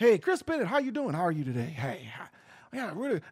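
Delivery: smooth, polished, low, soft buttery radio delivery. Speaker shows the voice he could put on in a shirt and tie, buttery voice. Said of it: "I can put that buttery voice on".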